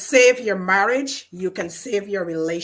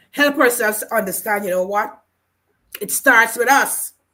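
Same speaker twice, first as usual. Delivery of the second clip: catching, choked-up voice, choking with emotion; 3 semitones higher, 4 dB louder than usual. Speaking to a conversation partner, choking up. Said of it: "I'm choking up".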